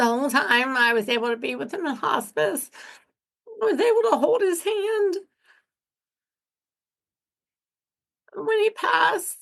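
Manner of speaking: tearful crying, high voice cracking and breaking. Recalling being with him in hospice when he passed, crying with voice high and cracking. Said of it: "when I start crying, my voice gets really high and cracks bad".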